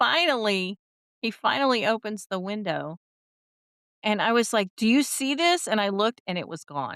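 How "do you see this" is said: acted, high-pitched, hopeful shouting. Retelling yelling at him until he finally opens the window: retelling a yell. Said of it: "And I'm yelling at him".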